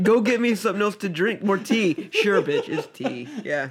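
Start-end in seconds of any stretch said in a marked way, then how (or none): 0.0-2.1 imperious, bossy, high-pitched screaming. Retelling a scene where a woman screams at the maid, retelling a scream. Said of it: "And then she screams at the maid".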